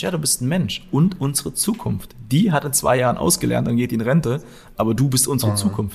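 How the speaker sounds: ordinary talk, nothing marked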